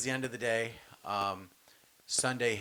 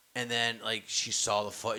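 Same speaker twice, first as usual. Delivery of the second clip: normal talking voice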